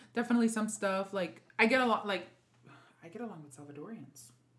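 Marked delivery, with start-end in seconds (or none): 3.1-4.3 very quiet hushed half-whisper under the breath. Admitting to friends which group you get along with: half-whispering. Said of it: "I said that in, uh, whisper".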